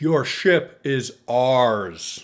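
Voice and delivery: thundering, booming, very loud voice. A game master voices someone on another ship calling down to the players, booming voice. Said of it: "You hear a booming voice".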